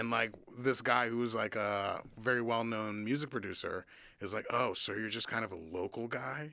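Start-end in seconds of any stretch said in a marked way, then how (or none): 4.5-6.5 play-acted, heavy, loaded, weighty delivery. Retelling a well-known music producer's question, imitating a producer's weighty tone. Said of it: "with this, like, weight, the tone of his voice".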